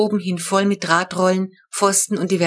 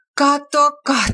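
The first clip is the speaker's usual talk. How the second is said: high, groaning exclamation let out as groan; 7 semitones higher, 3 dB louder than usual. Reading a story: Mom groans over the cluttered terrace. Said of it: "stöhnte Mama".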